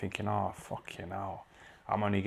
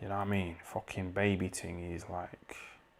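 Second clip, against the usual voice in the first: usual speaking voice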